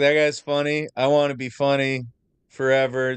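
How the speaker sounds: usual speaking voice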